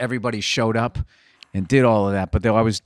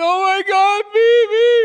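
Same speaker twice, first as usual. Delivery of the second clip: put-on hysterical wailing sob, very high, drawn out; 6 dB louder than usual. Retelling a phone call from a woman who called, imitating hysterical crying. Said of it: "She's hysterically crying".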